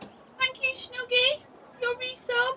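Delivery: very high-pitched put-on chatty voice. Thanking a viewer for resubscribing, in a high-pitched voice. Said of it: "she puts on a really high-pitched voice".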